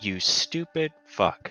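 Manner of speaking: dead calm, very quiet, level delivery. Voicing a possessed elf who turns to face Gira: very calm. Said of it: "and says very calmly".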